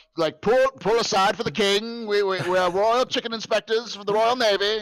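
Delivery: terrible put-on British accent, very high and loud. Retelling posing as royal chicken inspectors with friends: terrible British accent. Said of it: "with our terrible British accents".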